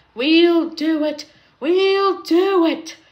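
breathless, drawn-out panting. Narrator reading a character's words in the middle of a race with a bus: panting. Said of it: "panted Thomas".

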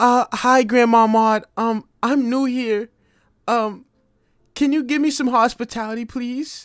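acted lost-sounding voice. Streamer addressing an old-lady character, pretending to be new, acting lost. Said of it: "let me act like I'm lost".

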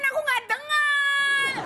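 long, stretched-out yell.

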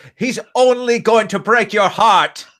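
very high, shrill, yelled shout. Voicing a character calling up the stairs after someone who leaves: shouting in character. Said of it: "She shouts".

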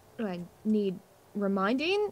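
voice lifted a little, swooping. A character replies to a companion's question, raising her voice a bit. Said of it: "raising her voice a bit".

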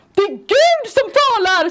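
shrill, high shriek at full volume. Telling a story of yelling out across a whole restaurant: retelling a scream. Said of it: "Skriker jag på hela den här restaurangen".

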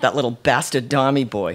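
ordinary delivery, nothing marked

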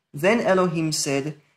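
ordinary talk

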